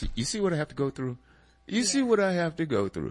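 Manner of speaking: light, joking ribbing. Talking about the partner who picks the topics, teasing her. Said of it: "I'm teasing you too at the same time".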